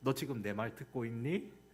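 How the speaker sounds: awkward, clumsy put-on Seoul accent. Quoting what a mom usually says, in an awkward seoul accent. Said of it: "제가 어색한 서울말로 했지만".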